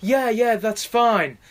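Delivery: high, sugary, fake-nice reassuring tone. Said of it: "she was nice to him at first".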